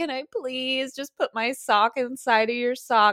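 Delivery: high, begging, pleading voice. Speaker retells what he said to him, acting out begging. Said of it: "I begged him".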